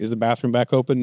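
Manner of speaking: ordinary talk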